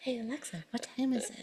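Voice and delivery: hushed, barely audible whisper. Acting out how he talks to the smart speaker at night, whispering. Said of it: "He's whispering".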